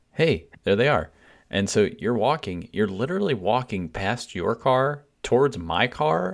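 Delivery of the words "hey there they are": ordinary talk, nothing marked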